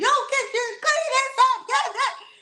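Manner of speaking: put-on shrill yelling, very high pitch. Retelling a boy yelling at everybody before loading the van, imitating someone yelling. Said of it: "started yelling at everybody".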